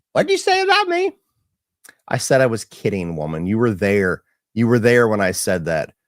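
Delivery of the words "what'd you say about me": defensive tone pitched very high. Imitating his wife being defensive while driving at night: imitating his wife being defensive. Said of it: "And she'll be like".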